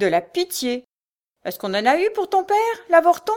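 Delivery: harsh, grating, shrill, raspy menace, rising pitch. A narrator reads a knife-grinder crying out as a blind woman listens, raspy, shrill, menacing voice. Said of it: "Cette voix rauque et stridente".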